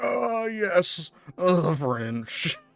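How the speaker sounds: put-on very slow, high, drawn-out, drunk-sounding musing. Imitating Orson Welles drunk on hearing the French: drunk Orson Welles impression. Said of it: "The Orwell or Orson Welles drunk".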